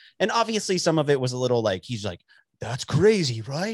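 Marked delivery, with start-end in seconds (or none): 2.6-3.8 strange, odd put-on British accent. Imitating a documentary narrator: weird British accent. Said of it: "In his weird, like, British accent".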